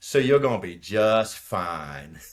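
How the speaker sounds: put-on Cajun accent, drawn-out "fine".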